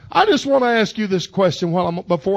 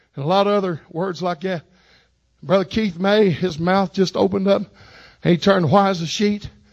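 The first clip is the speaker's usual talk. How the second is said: normal talking voice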